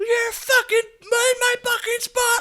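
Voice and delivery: shrill, very high, furious full-volume screaming. Retelling a woman yelling at the speaker on opening the door, imitating her screaming. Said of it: "Like just fucking screaming".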